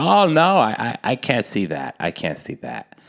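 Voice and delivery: giggly, swooping, drawn-out voice, as if being tickled. Retelling a lady's reply to them, imitating a giggly, tickled voice. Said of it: "sounded like someone was like tickling her feet".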